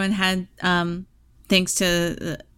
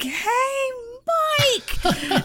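put-on overexcited yell, very high. Retelling calling out to Mike about the towels: imitating own yell. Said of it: "I might have yelled at him".

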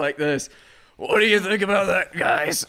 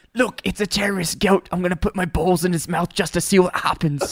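poor, bad, fake put-on Australian accent. Recalling what Quinn's buddy always says, in a bad Australian accent. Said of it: "You are the worst accent guy".

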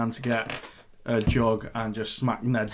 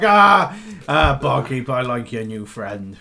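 very loud, booming words spoken through laughter; 2 semitones higher, 8 dB louder than usual. Voicing a tavern guy who looks at a player: laughing in character. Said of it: "He looks at you and just starts laughing".

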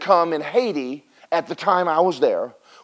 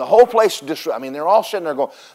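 ordinary delivery

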